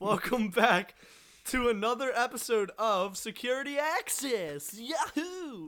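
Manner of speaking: too eager, overly excited, over-enthusiastic. Show host welcoming listeners back to another episode, over-enthusiastic. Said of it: "You're a little too over-enthused there".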